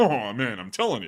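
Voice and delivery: pushed low voice that cracks. Doing a Rodney skit someone sent over: Rodney Dangerfield voice. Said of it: "this is a Rodney skit right here".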